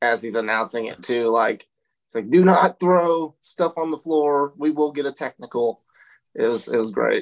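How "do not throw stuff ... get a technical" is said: acted irritated, angry, stern arena PA announcer voice. Act out Jeremy Gray announcing a warning about throwing stuff on the floor, imitating angry Jeremy Gray. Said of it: "hear the anger in Jeremy Gray's voice".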